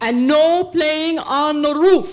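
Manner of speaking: put-on thick Dutch accent. Retelling what his father leaned out the car window to say, in a thick Dutch accent. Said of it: "in his thick Dutch accent".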